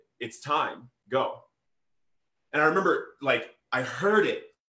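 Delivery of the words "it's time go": quiet, hushed, urging half-whisper. Quoting what a man half-whispered to the speaker, retelling a half-whisper. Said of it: "he whispered to me".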